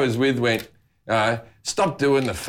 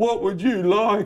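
mocking, high, put-on impaired-sounding voice; 8 semitones higher than usual. Retelling how a mate spoke to customer service staff, in a put-on impaired voice. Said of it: "put on a mentally challenged voice and go".

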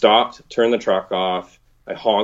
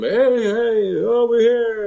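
play-acted, very high, playful yell with hey stretched. Retelling yelling back to a friend who called out, retelling a playful yell. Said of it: "I start yelling back at him".

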